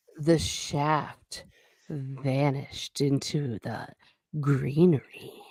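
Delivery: slow, low, raspy, drawn-out voice. Asked to repeat a line slowly with more rasp, speaker says it again that way. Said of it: "could you say that slowly but with a little bit more raspy voice".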